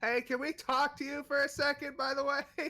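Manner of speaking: shrill, very high, very loud echoing yell. Yelling to call a character back for a talk: yelling. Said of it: "she's going to yell".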